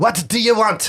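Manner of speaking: put-on French accent, pitched very high and squeaky. Voicing an adventurer with a French accent: put-on French accent. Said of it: "accessing French accent".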